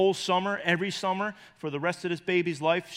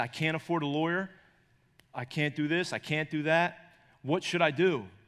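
imitated crying, tearful and pleading. Retelling a grandma's phone call about a custody fight: imitating someone crying. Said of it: "She's crying on the phone".

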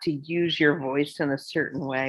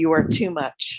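normal talking voice

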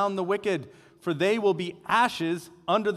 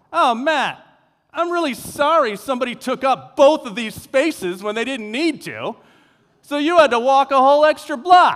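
loud, carrying, pointed, meant-to-be-overheard delivery; 6 semitones higher, 10 dB louder than usual. Retelling what she said loud enough for passersby to hear: imitating someone saying it loudly. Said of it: "And really loud, like, loud enough for them to hear".

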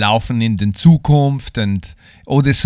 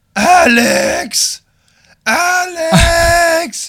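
put-on very high-pitched, drunken yelling and calling out. Retelling a drunk girl who lost somebody, calling a name: imitating a drunk girl yelling. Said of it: "she was very drunk. And she was like".

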